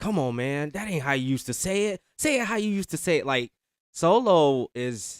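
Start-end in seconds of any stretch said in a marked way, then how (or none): 0.0-3.2 put-on urging tone, pitched up. Retelling a wrestler pushing another to say it louder: Solo Sikoa egging him on. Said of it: "Solo egging him on like".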